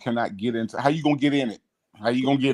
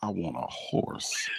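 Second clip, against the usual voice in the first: wistful, barely audible whisper under the breath; 5 semitones lower, 10 dB quieter than usual. Retelling watching a movie with Mom, quoting her: imitating a whisper under breath. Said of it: "she whispered under her breath".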